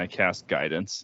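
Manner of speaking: ordinary talk, nothing marked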